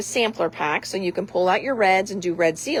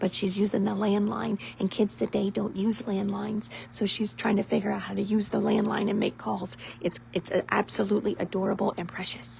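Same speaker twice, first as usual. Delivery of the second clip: hushed whisper, quieter; 8 dB quieter than usual. Telling viewers about someone using the landline nearby: whispering. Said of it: "I'm gonna whisper this so she doesn't hear".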